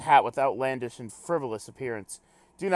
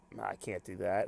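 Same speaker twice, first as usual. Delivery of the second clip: plain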